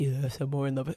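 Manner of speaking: strained put-on voice. Retelling a man's answer when his partner asks about another woman, strained put-on voice. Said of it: "I can't do this voice. It's hurting my throat".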